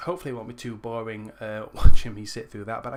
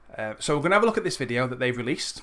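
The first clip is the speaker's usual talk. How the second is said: usual speaking voice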